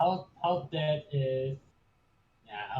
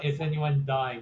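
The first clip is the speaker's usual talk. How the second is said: ordinary talk, nothing marked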